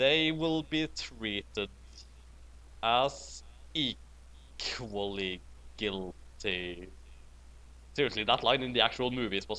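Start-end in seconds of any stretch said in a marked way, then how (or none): 0.0-6.9 very slow, breathy whisper, word by word. Imitating a line from the movies, slow, deliberate Snape voice. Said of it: "the best way I can think of to imitate Snape's voice, just speaking very slowly".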